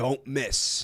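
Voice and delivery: play-acted utterly grave, sincere, dead-serious earnest tone. Retelling a commentator's answer on coming back from behind: imitating Drew Gooden's most serious tone. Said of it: "in the most serious tone".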